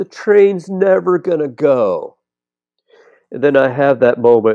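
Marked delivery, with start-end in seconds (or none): 0.0-2.2 put-on, high, sudden, blurted-out child's shout. A parent recalls his young daughter at a ballgame, retelling a child's scream. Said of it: "she just screams out".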